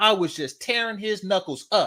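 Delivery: high, taunting, needling, boastful show-off parody voice. Mocking how the other speaker sounds while bragging: mocking imitation of the other speaker. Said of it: "That's what you sound like".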